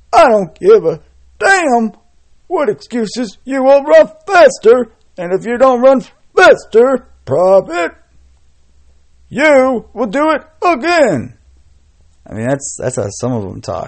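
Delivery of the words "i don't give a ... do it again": very high, loud, barking drill sergeant voice. Showing how some of them talk to someone making excuses, in a drill sergeant voice. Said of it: "That's my drill sergeant voice".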